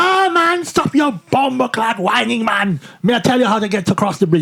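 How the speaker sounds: thick, heavy, put-on Jamaican accent. Speaker retells a man advising him from across a bridge; thick Jamaican accent. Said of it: "He said in a really thick Jamaican accent".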